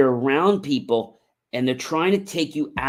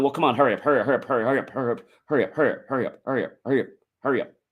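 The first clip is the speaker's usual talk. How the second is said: mock rushed, fast speech. Acting out what somebody else is telling you: imitating someone talking fast. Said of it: "As I'm saying it so fast".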